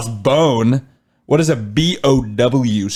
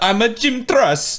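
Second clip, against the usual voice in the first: put-on, bad, fake Italian accent; 10 semitones higher than usual. Imagining a suspect giving a false name at a hotel, in a bad Italian accent. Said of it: "he does the bad Italian accent".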